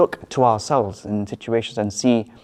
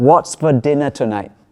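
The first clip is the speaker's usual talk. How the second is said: loud shouting, right up close; 3 semitones higher, 3 dB louder than usual. Telling a joke about a husband asking his wife about dinner, imitating him shouting. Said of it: "shouts in her ear".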